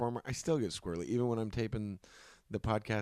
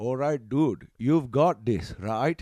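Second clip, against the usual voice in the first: really bad Indian accent, very loud and slow; 3 semitones higher, 8 dB louder than usual. Retelling a casting audition done as a joke: imitating a bad Indian accent. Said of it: "a really bad, like, you know, the racist, like, Indian accent".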